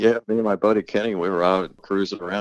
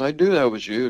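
put-on yelling, pitched higher; 5 semitones higher than usual. Quoting what the pickle-splattered woman yelled at the speaker, retelling a yell. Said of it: "Yelled at me".

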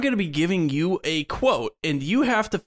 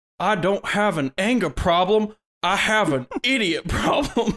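put-on Texan accent, cartoonish dad-like voice; 3 semitones higher than usual. Trying a cartoon character's accent for listeners, as a Hank Hill impression. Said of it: "That's definitely King of the Hill".

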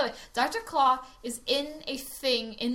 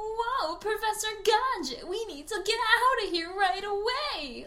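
very high, exaggerated, over-the-top stagey acting voice; 10 semitones higher than usual. Imitating a woman who talked like a Disney Channel character: exaggerated Disney Channel voice. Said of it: "She talked like a very exaggerated Disney Channel character".

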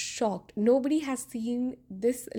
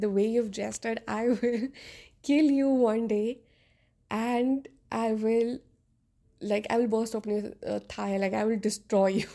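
plain

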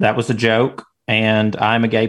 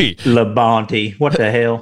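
very serious put-on Southern accent. Naming another driver after praising Dale Earnhardt, in a very serious Southern accent. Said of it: "in a very serious Southern accent".

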